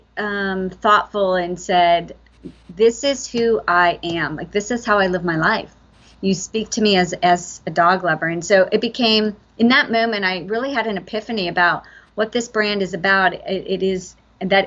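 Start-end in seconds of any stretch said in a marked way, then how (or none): none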